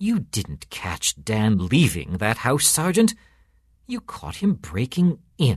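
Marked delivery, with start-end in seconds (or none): none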